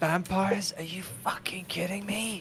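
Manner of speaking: hushed whisper. Speaking in character to the group, trying to be subtle: whispering quietly. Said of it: "I'm gonna whisper and just be quiet".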